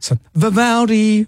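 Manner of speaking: long, high-pitched calling out. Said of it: "a good name that you could yell out".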